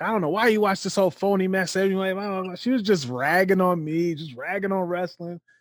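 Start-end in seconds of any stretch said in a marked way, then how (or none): 0.0-1.8 put-on nagging, disapproving yelling voice. Retelling how mom reacted to wrestling on TV: imitating mom yelling. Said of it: "my mom was yelling".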